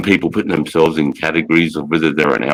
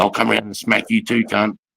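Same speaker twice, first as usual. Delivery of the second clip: mock aggressive voice, higher and quieter; 5 semitones higher, 4 dB quieter than usual. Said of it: "he's gobbling off to me".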